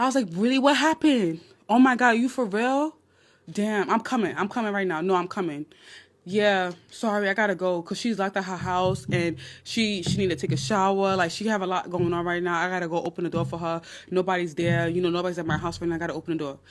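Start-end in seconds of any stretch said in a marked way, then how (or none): 0.3-7.8 put-on, fake shocked and alarmed tone. Retelling how a phone call was faked to leave: retelling fake shocked phone call. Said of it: "I tried to make it seem like".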